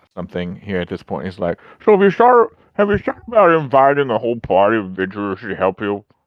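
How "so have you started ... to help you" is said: loud, high words mushed by a full mouth. Narrating a scene where Fancy interjects with something in his mouth, talking with mouth full. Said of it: "is his mouth full of something".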